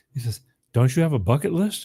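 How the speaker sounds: Southern accent impression. Retelling a man's question to him about a bucket list, in a put-on Southern accent. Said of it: "I'm going to do some Southern accent".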